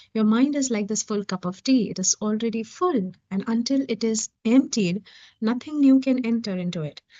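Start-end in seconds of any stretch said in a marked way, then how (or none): none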